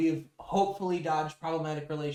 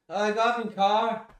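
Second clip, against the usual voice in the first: put-on drunk British accent, raised voice; 6 semitones higher, 6 dB louder than usual. Explaining a British slang word by acting out a drunk reply, drunk British accent. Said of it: "something a British person says while drunk".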